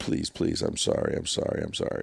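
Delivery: put-on breathy, frantic, desperate whispered pleading. Retelling a driver dropping to his knees and saying sorry: imitating desperate pleading. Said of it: "dropped to his knees and just said".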